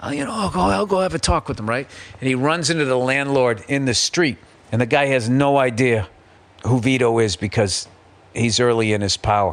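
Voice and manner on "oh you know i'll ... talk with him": raspy, rough-throated voice. Retelling a film scene, quoting the young mob boss: raspy Marlon Brando voice. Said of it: "the Marlon Brando, like, raspy voice thing".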